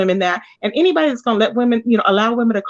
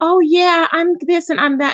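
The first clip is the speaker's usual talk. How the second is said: put-on soft, higher-pitched voice; 7 semitones higher than usual. Retelling how a woman usually talks: imitating a soft voice. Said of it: "that soft voice like".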